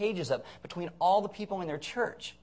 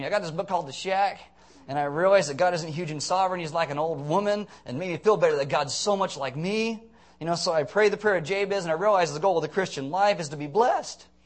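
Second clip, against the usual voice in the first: sarcastic, comfortable-sounding American voice. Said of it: "This is where I'm gonna be really sarcastic".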